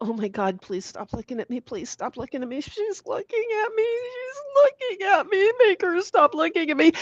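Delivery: high, begging, pleading little dog voice. Voicing a dog who looks away from the stare: voicing the dog Ditto. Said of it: "he just kinda goes and slowly tries to look away and go".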